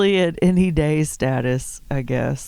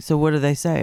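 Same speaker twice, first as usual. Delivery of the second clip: plain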